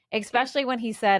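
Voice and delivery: ordinary talk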